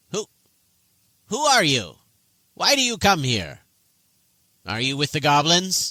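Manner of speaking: high, small, little gnome character voice. Voicing a gnome questioning strangers at her door: gnome character voice. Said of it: "the little gnomish head pokes out".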